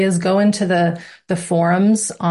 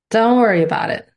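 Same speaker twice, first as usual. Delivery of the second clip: put-on Italian mob boss voice, higher; 4 semitones higher than usual. Reassuring listeners worried about the weekly lessons and calls, Italian mob boss voice. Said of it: "I put my Italian mob boss voice on".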